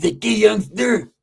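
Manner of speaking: put-on old man voice. Retelling a moment while working out, imitating an old man. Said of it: "this is exactly how he sounded".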